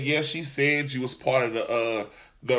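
normal talking voice

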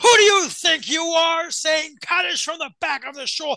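shrill, very high screaming. Retelling how a guy in shul screamed at someone saying Kaddish: imitating a guy screaming. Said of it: "a guy starts screaming at him".

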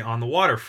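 ordinary delivery

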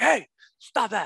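stern yell, pitched high. Showing the dad voice used on kids in the backseat, dad voice yelling at kids. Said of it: "It's like yelling at kids in the backseat".

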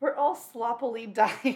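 slow reading, broken up by laughter.

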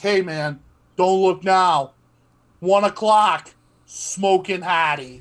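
meant to sound subtle but far too loud, slow. Retelling what a kitchen coworker said behind the line: imitating someone saying it loudly. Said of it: "he'd say it so loud".

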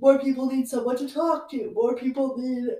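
words pulled out while yawning. A sleepy speaker, mid-thought, yawning while talking. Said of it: "sorry, I'm yawning".

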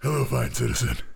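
put-on character voice, straining the throat. Answering a greeting in a role-play, in a put-on character voice. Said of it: "you might want to say this in your real voice".

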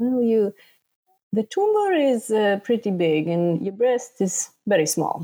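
put-on swooping sing-song Italian accent. Retelling the Italian doctor's surgery recommendation, in an Italian accent. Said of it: "I love the accent".

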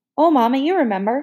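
high, sugary-sweet, wheedling, coaxing voice. Reading a story aloud, voicing Ellie answering Mama in a sugary-sweet voice. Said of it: "Ellie's voice was sweeter than a melted Mars bar".

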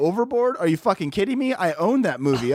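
ordinary talk

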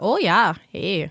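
put-on Upper Michigan accent. Showing what a Yooper accent sounds like: Yooper accent. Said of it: "Northern Minnesota-ish".

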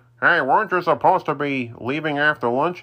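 teasing, ribbing dad voice. The speaker recounts his father greeting his early arrival, imitating his dad. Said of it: "I was just imitating my dad".

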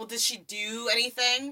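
put-on nihilistic disgust, male voice. Describing two guys, the speaker acts out the first one's reaction: imitating a disgusted guy. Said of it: "he's already nihilistic and disgusted".

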